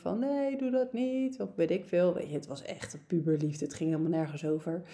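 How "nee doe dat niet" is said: play-acted clinging, pleading, slow begging tone. Recalling clinging to a teenage partner's legs, acting out past begging. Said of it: "smekend aan zijn benen hing".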